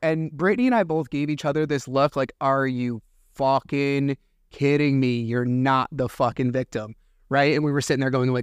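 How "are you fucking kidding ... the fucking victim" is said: ordinary talk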